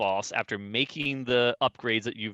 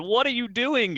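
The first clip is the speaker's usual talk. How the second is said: acted, very high-pitched screaming; 12 semitones higher, 4 dB louder than usual. Recalling watching a game player dig under a tower, retelling screaming at an iPad. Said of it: "I'm screaming at my iPad".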